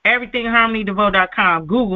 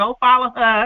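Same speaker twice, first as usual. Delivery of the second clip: ordinary delivery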